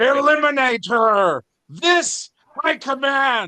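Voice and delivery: booming, very high-pitched, slow delivery. A muscular man recognizes you, points at you, and speaks in a booming voice. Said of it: "in a booming voice".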